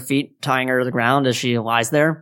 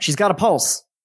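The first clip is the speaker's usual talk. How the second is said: calling out, pitched up; 5 semitones higher than usual. Narrating a game scene, the one who ran to Betsy yells out. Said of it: "And he yells out".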